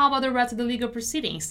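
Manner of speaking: fast, natural, run-together reading.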